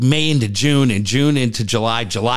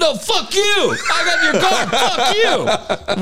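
put-on, very high, very slow drawn-out screaming. Retelling a phone call with the car holder: imitating own screaming. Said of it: "We're just screaming at him".

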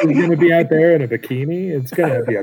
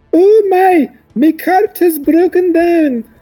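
very high, loud put-on Scottish accent; 8 dB louder than usual. Acting out a ruse as a broken-down traveller: scottish accent. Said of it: "You're Scottish now?".

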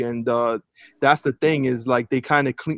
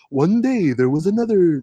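narrator-style storytelling voice, slightly higher-pitched; 4 semitones higher than usual. Imitating the narrator's dubbing in the new Lion King: slightly higher narrator voice. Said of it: "he speaks, like, a little higher, and he's like".

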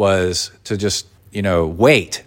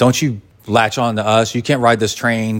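plain

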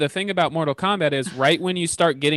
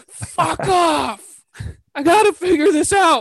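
put-on loud, very high, very slow yelling; 14 semitones higher, 5 dB louder than usual. Acting out another speaker yelling at his wife over a movie rating: imitating someone yelling. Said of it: "He's yelling at his wi-".

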